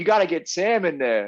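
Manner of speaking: put-on American accent. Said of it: "'cause she's American and that's how she sounded".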